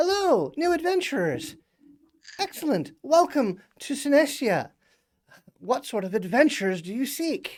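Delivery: little pixie voice, very high. Voicing a pixie that greets new adventurers: pixie voice. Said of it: "a little, like, pixie kind of flits out".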